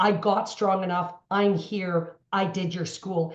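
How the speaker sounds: mock tearful, moved delivery, spoken through tears. Retelling what a woman said with tears in her eyes: imitating tearful speech. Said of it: "she said to me with tears in her eyes".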